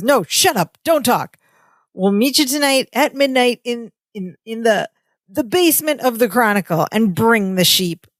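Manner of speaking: nasty, mean tough-guy voice. Retelling a ransom phone call in a sitcom scene: imitating Larry's mean voice. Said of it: "goes back to his, like, mean voice".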